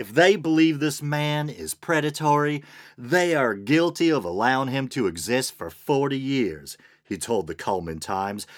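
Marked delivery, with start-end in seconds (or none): 0.0-6.8 put-on Southern accent with drawl. Reading aloud a man's quote to a newspaper: put-on accent. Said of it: "should I do the accent again?".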